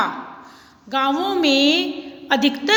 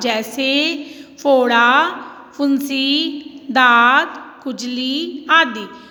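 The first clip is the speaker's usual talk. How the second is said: very slow list, each word set apart, short pauses. Explaining the comma sign with a list, short pauses between फोड़ा, फुंसी, दाद, खुजली. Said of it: "तो मैं थोड़ा थोड़ा रुकी है ना".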